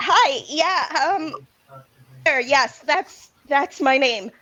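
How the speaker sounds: a little flustered, rattled, stumbling over the words. Playing a character who gets flustered when greeted: flustered Claire. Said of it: "see Claire get a little flustered".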